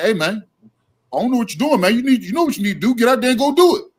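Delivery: loud, high-pitched, urging pep-talk coach voice. Describing a trainer talking in the corner, the speaker acts it out in Boziani voice. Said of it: "In my Boziani's voice".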